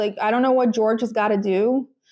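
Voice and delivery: plain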